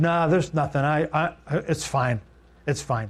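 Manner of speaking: mock-embarrassed tone. Retelling their answer when a man asked about Joe: retelling an embarrassed denial. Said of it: "And I was embarrassed".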